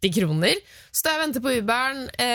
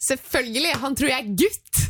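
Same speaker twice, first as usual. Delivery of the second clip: ordinary talk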